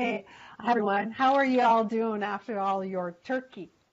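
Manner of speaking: put-on American accent.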